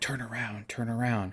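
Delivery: very soft half-whisper, barely above breath. Retelling a movie scene where Mac half-whispers to Carl Weathers, half-whispering like Mac. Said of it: "he hears Mac whispering".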